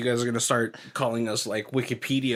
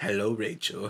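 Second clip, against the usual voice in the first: creepy put-on Irish accent; 3 semitones lower, 4 dB quieter than usual. Joking about Silence of the Lambs vibes, doing an Irish Hannibal Lecter impression. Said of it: "but Irish".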